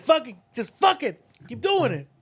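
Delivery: put-on yelling. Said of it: "then yelling and going".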